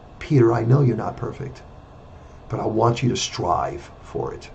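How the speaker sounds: mock gentle, loving, calm, almost whispered. Retelling what a scolding boss said once calm: imitating a calm, loving voice. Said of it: "calm and loving voice".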